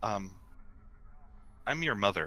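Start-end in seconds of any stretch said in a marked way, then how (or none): 1.6-2.3 words sighed out on the breath. Voicing a vice admiral meeting a player character: sighing while speaking. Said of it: "just sighs and goes".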